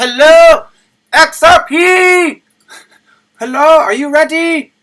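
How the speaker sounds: booming, very loud, very high-pitched yell. Speaker opens by greeting the audience, yelling. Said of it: "Sorry, I was yelling".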